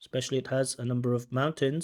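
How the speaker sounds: robotic, unnatural, flat, mechanical monotone. Repeating a line to show unnatural intonation, flat mechanical intonation. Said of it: "not quite natural intonation".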